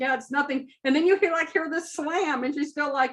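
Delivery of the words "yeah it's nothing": casual, unbothered, nonchalant offhand dismissive tone. Retelling a friend's reply about a shadow: imitating a nonchalant reply. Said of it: "so very nonchalantly, she's like".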